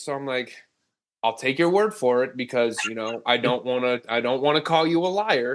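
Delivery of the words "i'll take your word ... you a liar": normal talking voice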